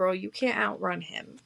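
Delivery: put-on laughing, amused tone. Retelling what a grandma said while laughing: imitating someone laughing while talking. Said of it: "this woman laughed at me and said".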